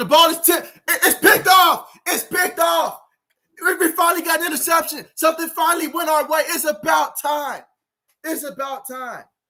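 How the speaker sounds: high, overjoyed, excited play-by-play announcer-style shouting. Fan watching the game reacts to an interception, excited yelling. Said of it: "Let me calm down here".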